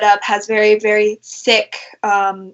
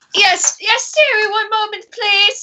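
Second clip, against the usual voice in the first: very high-pitched voice calling out from afar; 12 semitones higher than usual. Voicing the dinner lady Gertrude calling from the back room: Gertrude calling out. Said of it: "you hear kinda called".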